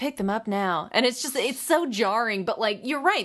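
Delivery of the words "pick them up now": small-market local tv ad announcer voice. Retelling a commercial's local add-on: imitating a local TV announcer. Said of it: "a local T V announcer".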